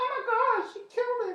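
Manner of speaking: very high put-on woman's voice. Acting out fans reacting after a set: imitating a lady's voice. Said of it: "that lady voice".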